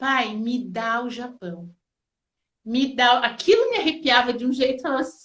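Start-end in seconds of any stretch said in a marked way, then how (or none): 0.0-3.2 mock vibrant, drawn-out prayerful intonation. Speaker retells a woman starting to pray aloud, imitating a vibrant prayer. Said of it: "com uma entonação tão vibrante".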